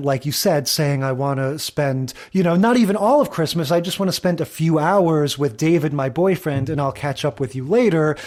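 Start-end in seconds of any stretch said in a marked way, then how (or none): none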